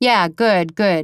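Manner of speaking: slow, flat, dry, expressionless deadpan. Narrator reads a woman's reply to an interviewer's question, deadpan and slow. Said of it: "she deadpanned slowly".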